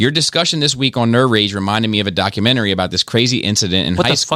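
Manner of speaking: plain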